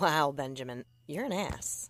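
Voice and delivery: ordinary talk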